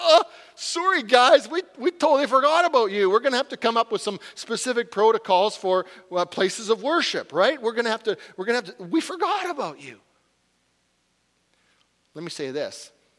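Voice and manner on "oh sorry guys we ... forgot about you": high, loud, sheepish, blurted out. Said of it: "kind of sheepish about it".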